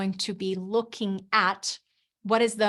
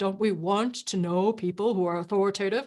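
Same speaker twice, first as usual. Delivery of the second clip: deliberately silly, goofy, exaggerated over-the-top tone. Talking about becoming authoritative, the speaker shows off: silly exaggerated voice. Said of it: "You see what I did with my voice there? ... talking silly like I was doing there".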